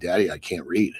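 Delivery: tearful, sobbing, crying pleading voice. Retelling a daughter crying over homework: imitating a crying daughter. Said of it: "starts fucking crying".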